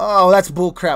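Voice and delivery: ordinary talk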